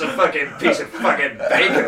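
voice dripping with disgust. Teasing the other speaker for how they repeated his theory: mimicking a disgusted tone. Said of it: "You said my bit with disgust in your voice".

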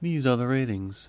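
polished, smooth newsreader-style read. Joking about how to read the ratings on the show: BBC Radio announcer voice. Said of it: "like someone on B B C Radio and just read it like".

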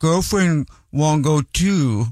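put-on cutesy, annoying toddler-style baby-talk voice. Retelling a Reddit story about an ex-girlfriend's habit, imitating an annoying baby voice. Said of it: "talking to me in an annoying baby voice".

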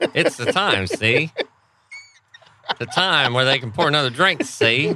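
put-on old-timey 1920s tough-guy gangster voice. Show host explains the break to everybody, in a 1920s gangster voice. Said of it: "it's 1925".

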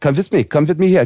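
bad put-on female Russian accent, pitched high. Retelling what a vet told him, the speaker uses a put-on female Russian accent. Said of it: "with a Russian accent".

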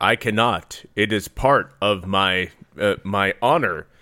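stilted, very slow dubbed-film voice, every word drawn out. Retelling the wizard Tragon refusing the princess: imitating Tragon's dubbed voice. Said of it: "And he's like".

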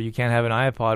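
ordinary talk

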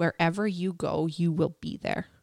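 put-on voice just above a whisper. Retelling the husband's reply about wanting to separate: imitating a voice just above a whisper. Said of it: "His voice is, like, just above a whisper".

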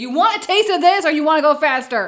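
loud, menacing tone. Standing over the sailor with an axe in character: menacing threat. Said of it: "I whip out my axe and stand over".

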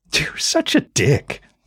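slow, teasing, chuckling, laughing through words. [name] answers Calla after her teasing, chuckling. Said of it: "chuckling as well".

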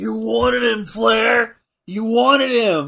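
loud, drawn-out, high mock taunting scream. Retelling what Harley Race is screaming at Flair: imitating Harley Race screaming. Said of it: "Harley Race is screaming at Flair".

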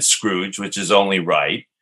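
plain

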